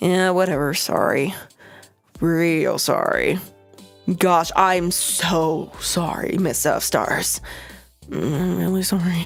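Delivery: mumbled, half-hearted. Narrator voicing several people made to apologize, mumbled half-hearted apology. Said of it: "mumbles a semi-coherent, semi-sincere apology".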